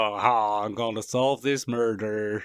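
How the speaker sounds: put-on slow, funny southern drawl. Joking around, the speaker shows off a funny southern accent. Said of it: "he can do funny southern accents".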